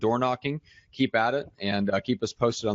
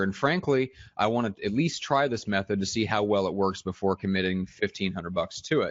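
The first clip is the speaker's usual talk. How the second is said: plain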